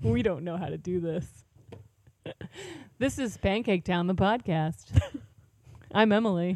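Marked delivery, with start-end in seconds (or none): 3.0-6.6 put-on radio announcer voice, radio host style. Opening a podcast by announcing its name in a put-on radio announcer voice. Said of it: "Do you like how I say it with a radio voice?".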